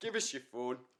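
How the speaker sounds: put-on West Country accent. Joking about being mugged by someone with a West Country accent, imitating that mugger in a West Country accent. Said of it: "someone with that accent".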